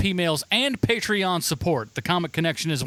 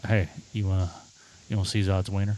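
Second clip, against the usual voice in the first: very low, flat, mumbled delivery; 10 semitones lower than usual. Quoting a movie line the way the actor says it: Michael Shannon impression. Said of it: "say it as Michael Shannon kinda says it".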